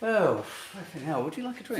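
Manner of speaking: mock, put-on posh accent. Asked on the spot to do a posh man, trying a mock posh voice. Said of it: "Now do a posh dick".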